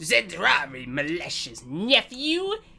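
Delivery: put-on elderly old man voice. Giving a quest character a voice, the speaker tries an old man voice. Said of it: "what's my old man voice?".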